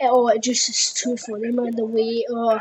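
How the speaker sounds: normal talking voice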